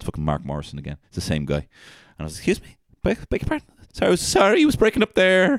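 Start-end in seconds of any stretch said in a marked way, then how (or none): 2.4-5.6 mock, very high, flustered, intimidated, nervous stammering. Retelling a phone call with a rude caller: imitating own intimidated reply. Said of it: "getting intimidated by a guy".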